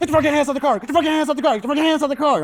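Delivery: put-on shrill, very high, aggressive barked yell, repeated. Retelling six cops with guns pointed: imitating cops yelling aggressively. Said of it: "they are going ham".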